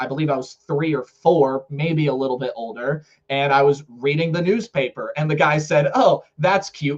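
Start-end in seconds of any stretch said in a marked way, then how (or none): 5.9-7.0 somewhat sarcastic, snarky, acted-out tone. Retelling what a snarky man on a train said to them as a child, imitating sarcasm. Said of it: "kind of sarcastically".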